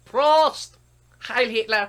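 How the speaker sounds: put-on old woman voice, very high and loud. Retelling a video of an old woman toasting at dinner: imitating an old german grandma. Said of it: "and the old woman goes".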